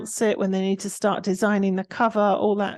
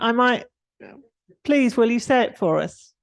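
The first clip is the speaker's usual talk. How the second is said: normal talking voice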